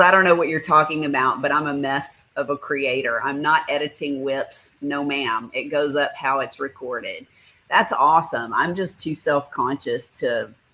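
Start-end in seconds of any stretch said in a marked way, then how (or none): none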